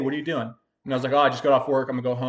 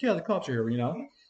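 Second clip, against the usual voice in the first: casually tossed off, nonchalant, no alarm; 3 semitones higher, 6 dB quieter than usual. Retelling a partner announcing the cops: imitating a nonchalant tone. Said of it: "'cause he said it so, like, nonchalantly".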